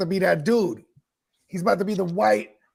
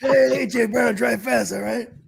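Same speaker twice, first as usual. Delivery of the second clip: each word dragged out slowly; 4 semitones higher than usual. Joking that Uncle Pete stole the car, imitating Uncle Pete. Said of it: "It was my Uncle Pete".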